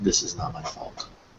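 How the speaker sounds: hushed whisper under the breath. Player's character lays a flower on his fallen brother, whispering under breath. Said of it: "I whisper under my breath".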